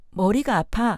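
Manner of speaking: ordinary talk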